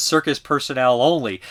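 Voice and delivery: plain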